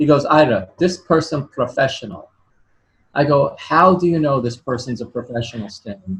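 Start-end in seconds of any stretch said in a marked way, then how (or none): 0.3-2.3 put-on heavy, thick, laid-on Russian accent. Retelling what Stan told the speaker on the phone, Stan's thick Russian accent. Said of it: "with thick Russian accent".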